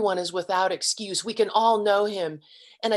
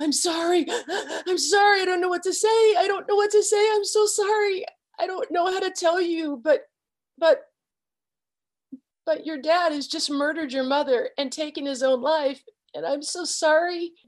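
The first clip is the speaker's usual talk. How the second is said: put-on very high voice, sobbing through choked words; 10 semitones higher than usual. Retelling what a grieving woman kept saying: imitating someone sobbing and choking. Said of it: "she was crying so hard, she sounded like she was choking".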